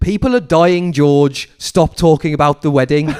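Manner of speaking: loud, high-pitched yelling. Retelling a friend's reaction to wedding coverage on TV: imitating a friend shouting at the TV. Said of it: "my mate Rich just shouting at the T V".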